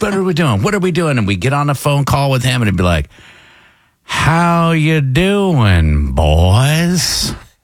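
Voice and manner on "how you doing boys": very slow, unhurried Southern drawl. Imitate your old consultant greeting the radio station crew on a phone call, as Joe Patrick, slow Southern talker. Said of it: "he might just be a slow Southern talker".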